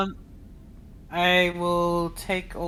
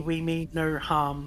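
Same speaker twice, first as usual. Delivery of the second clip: normal talking voice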